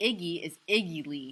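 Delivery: plain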